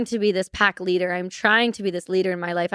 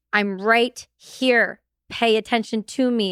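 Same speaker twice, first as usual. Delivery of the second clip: stern, insistent, slow, forceful and angry; 2 semitones higher than usual. Retelling what she demanded during a vision: imitating an angry forceful demand. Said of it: "She would get angry".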